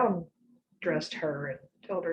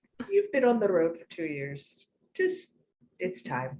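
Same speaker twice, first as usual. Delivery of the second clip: pretty, sing-song little Irish lilt. Retelling how she told Moraine to settle down, light Irish lilt. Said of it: "With her pretty little Irish lilt".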